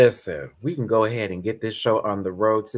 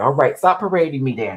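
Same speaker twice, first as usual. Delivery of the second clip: raised voice, speaking as dog; 4 semitones higher, 5 dB louder than usual. Speaking for the dog being carried around: voicing Mamu the dog. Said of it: "He's like".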